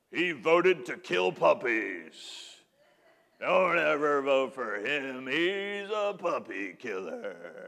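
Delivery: ominous ad announcer voiceover. Mocking political ads, speak as the ad announcer: political ad announcer voice. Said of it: "who does that voice?".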